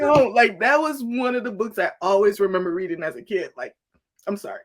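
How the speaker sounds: tearful, crying speech with a cracking, breaking voice. Remembering a book read as a kid, crying, voice breaking. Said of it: "Minute cry break".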